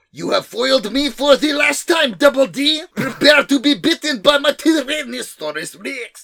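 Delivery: very high, crumbling, shrill, loud fake German villain accent. Improvising dialogue for the villain New Hitler, in a New Hitler villain voice. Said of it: "that accent fell apart".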